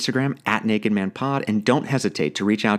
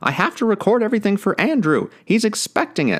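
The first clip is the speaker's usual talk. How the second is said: very high, terrible put-on grandma voice. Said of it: "That's a terrible impression. Sorry, Grandma".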